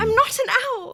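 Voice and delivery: shrill, very high, very loud screaming outburst. Doing a requested Hermione impression: Hermione voice screaming. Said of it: "she's screaming about she's not an owl".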